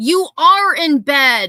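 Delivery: very loud, high-pitched shouting yell. Speaker, angered, calling Betty out directly: yelling. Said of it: "I didn't mean to yell".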